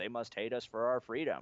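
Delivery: ordinary talk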